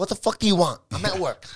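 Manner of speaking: mean, loud, high-pitched voice. Recalling calling mom at work and her answer, imitating mom's mean voice. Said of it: "She sounds mean as fuck".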